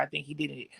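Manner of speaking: quiet muttered aside. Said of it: "I'll never say".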